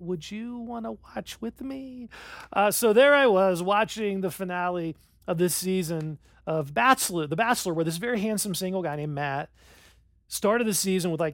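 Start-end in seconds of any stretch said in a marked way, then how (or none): 0.0-2.1 soft, high, sugary sweet little voice. Retelling how his wife asked him to watch: imitating a sweet little voice. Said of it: "in that little sweet voice that wives".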